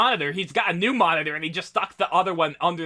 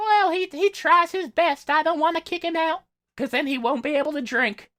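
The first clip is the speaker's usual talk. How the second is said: put-on very high, sweet little old lady voice; 10 semitones higher than usual. Imagining a reply about a man who won't pay rent, sweet little old lady voice. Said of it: "like a sweet old like little lady voice".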